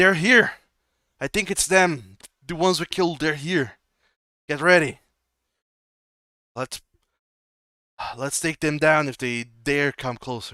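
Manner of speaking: very loud, high-pitched shouting. As a man on the moving train warning the others, shouting. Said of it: "just start start shouting".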